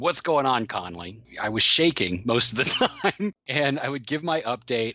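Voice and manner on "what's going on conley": put-on gruff Texas accent. A project manager recalls a man bringing everyone together, in a gruff texas accent. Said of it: "in this gruff Texas accent".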